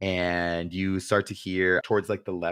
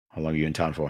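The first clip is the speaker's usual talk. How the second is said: monotone guard voice, faster; 3 semitones lower than usual. A storyteller voices a guard questioning the player's returning character, in a monotone guard voice. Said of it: "the most monotone voice of a guard".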